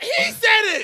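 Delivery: high, loud yell.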